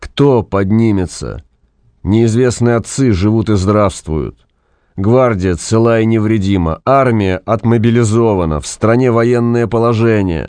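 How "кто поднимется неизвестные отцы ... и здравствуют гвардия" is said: ordinary delivery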